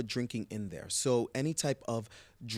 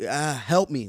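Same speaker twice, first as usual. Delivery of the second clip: mock pleading voice, higher and louder; 3 semitones higher, 10 dB louder than usual. Retelling how patients come in asking for help: imitating a patient asking for help. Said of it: "these guys come in like".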